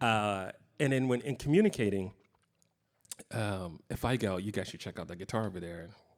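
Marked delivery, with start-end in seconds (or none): 4.4-5.9 offhand, quiet delivery. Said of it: "three different ways".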